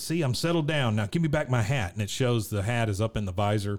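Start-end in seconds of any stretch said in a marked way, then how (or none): 0.0-1.9 play-acted coaxing, beseeching, begging tone. Recapping a scene where Hank drives Dale to the doctor: Dale pleading impression. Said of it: "Dale is pleading".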